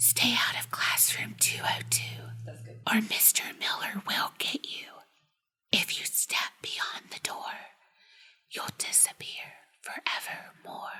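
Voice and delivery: very quiet, faint, whispered ghostly voice. Reading a story; a voice speaks through a classroom door, faint ghostly voice. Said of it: "a faint, ghostly voice say".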